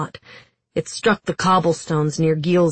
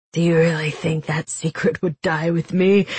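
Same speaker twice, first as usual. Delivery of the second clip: ordinary delivery, nothing marked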